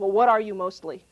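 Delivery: loud, fed-up, exasperated delivery. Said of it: "he's getting very exasperated".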